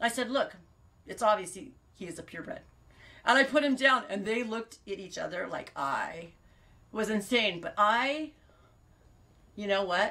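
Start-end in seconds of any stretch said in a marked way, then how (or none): 0.3-2.6 acted, mock-serious deadpan delivery. Retelling what they told onlookers about a dog, in a put-on deadpan. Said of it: "I did it totally with a totally deadpan".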